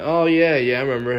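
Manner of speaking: acted irritated, fed-up, annoyed tone. Retelling own reply to a friend's question: imitating own annoyed reply. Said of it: "annoyed 'cause we didn't see anything".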